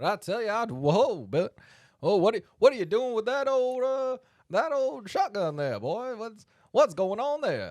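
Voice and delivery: high, loud, crowing talking-rooster voice. Riffing in a comedy bit as a cartoon rooster, Foghorn Leghorn voice. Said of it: "foghorn leghorn looking ass".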